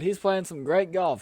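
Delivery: put-on sarcastic delivery. Retelling what was said about a golfer's double bogey: imitating a sarcastic remark.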